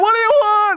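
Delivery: high scream of utter stark terror. Telling a joke where a man yells at a stranger: screaming in stark terror. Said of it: "he screams out in utter stark terror".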